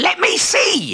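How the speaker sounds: very high, shrill squealing cry. The Tengu, trying to snatch the bamboo from Iso's hand: squealing. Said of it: "squealed the Tengu".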